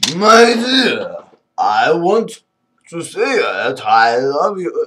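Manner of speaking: put-on drunk man voice. Showing how some men act when declaring love to a woman, acting drunk. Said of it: "Drunk it, really".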